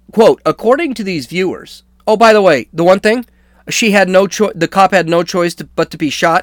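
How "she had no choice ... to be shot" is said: ordinary talk, nothing marked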